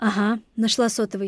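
ordinary delivery

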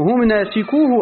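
ordinary talk, nothing marked

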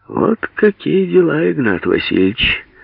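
sarcastic, teasing, mocking, high and sing-song. Surkov addresses the old man with the copper beard, mocking. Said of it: "Насмешливо обратился Сурков".

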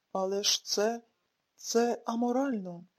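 plain

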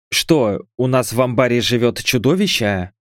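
ordinary delivery

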